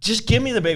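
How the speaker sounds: play-acted very high, shrill, fed-up, angry voice. Retelling a mother demanding her baby back: imitating someone angry. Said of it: "She's getting really pissed off".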